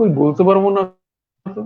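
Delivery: ordinary talk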